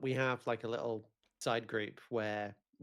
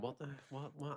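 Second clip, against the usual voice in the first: bewildered, groggy, confused stammering outburst; 3 semitones higher, 9 dB quieter than usual. Retelling waking up at four in the morning: acting out own past confusion. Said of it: "I literally woke up going".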